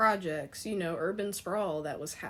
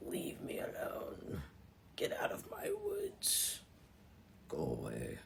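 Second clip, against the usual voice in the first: hushed, low, raspy, gravelly creature whisper; 12 semitones lower, 8 dB quieter than usual. Imagining what a hairy creature running around would say, in a low, gravelly voice. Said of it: "I can almost hear a voice in this low, gravelly tone".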